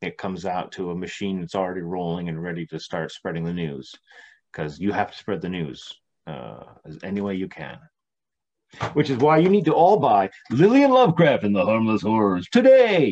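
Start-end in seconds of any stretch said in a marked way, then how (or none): 8.9-13.1 very loud, booming, swooping commercial announcer voice. A guest plugs his new book to the audience in a commercial announcer voice. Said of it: "There's that commercial voice".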